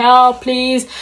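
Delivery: put-on shouting, screaming. Retelling a scream for help while trapped in a bush: imitating shouting for help. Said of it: "I was shouting on top of my lungs".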